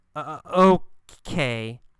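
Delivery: unsure, halting, stop-and-start delivery. Showing how a character says okay in a story: hesitant, stop-and-start.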